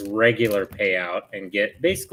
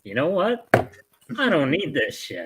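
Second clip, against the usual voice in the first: high, fed-up, blurted outburst. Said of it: "and you're like".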